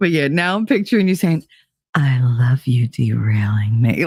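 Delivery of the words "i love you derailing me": very low, slow, put-on sexy purr. Picturing the listener saying this in the voice they use for her, put-on sexy voice. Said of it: "in that voice that you use for me".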